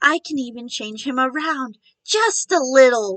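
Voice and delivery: whisper meant to be heard. Reading a story aloud, a character leans too close: whisper that is far too loud. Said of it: "in a whisper that is far too loud".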